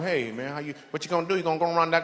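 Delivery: put-on thick, exaggerated, banjo-like twang. Describing talking to a man with heavy twang, imitating a heavy twang. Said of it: "so much twang it sounds like they speak in banjo".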